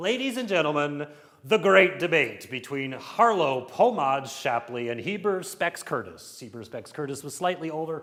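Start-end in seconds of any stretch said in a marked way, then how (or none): 0.0-6.4 boxing ring announcer calling-out voice. Introducing the 1920s great debate like a prize fight, boxing announcer voice. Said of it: "in the form of a boxing announcer".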